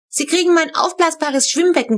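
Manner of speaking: loud announcing voice. One of the kids speaks up to the family, trumpeting. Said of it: "posaunte Haft".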